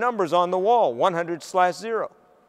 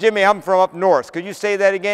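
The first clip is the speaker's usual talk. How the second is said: normal talking voice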